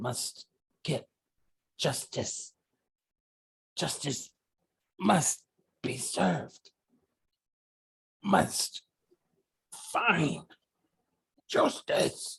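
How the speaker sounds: small, cracking, whispery little voice. Narrator voicing a creature the players hear: cracked little voice. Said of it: "you hear this cracked little voice".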